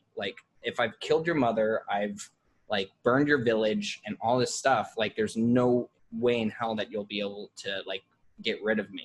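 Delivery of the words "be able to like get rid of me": normal talking voice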